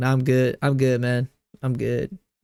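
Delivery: plain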